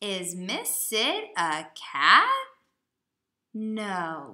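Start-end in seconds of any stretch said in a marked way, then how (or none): 0.0-2.3 louder voice with pitch rising at the end. Reading a sentence aloud and showing how to use the question voice. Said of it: "you need to use your question voice".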